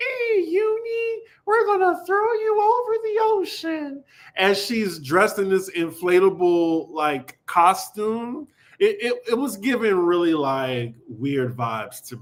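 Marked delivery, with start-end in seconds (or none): 0.0-4.0 very high mean teasing voice, "Uni" drawn out. Describing what Meredith said to Uni, imitating Meredith's high voice. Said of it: "Meredith is talking in this high voice".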